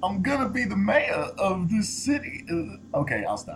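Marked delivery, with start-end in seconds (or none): 0.0-2.4 put-on tipsy, slurring-style film star voice. Trying the movie line again: Christopher Walken impression. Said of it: "a mix between Christopher Walken and John Travolta and me drunk".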